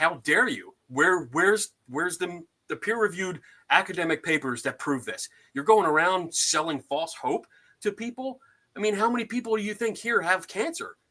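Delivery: put-on furious outburst. The speaker retells losing it and yelling at someone: retelling a furious yell. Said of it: "I just lost my shit and I started yelling".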